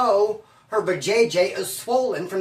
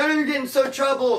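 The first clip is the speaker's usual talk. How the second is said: fake teary crying voice, pitched up; 6 semitones higher than usual. Retelling a childhood store trick to the clerk: imitating fake crying. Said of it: "Fake a tear".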